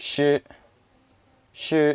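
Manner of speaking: shi held level and high throughout. Giving a tone example, say it in a flat high level tone. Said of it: "high level the whole time".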